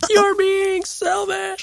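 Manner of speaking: put-on high, slow, drawn-out whiny kid shout.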